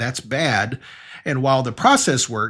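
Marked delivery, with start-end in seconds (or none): none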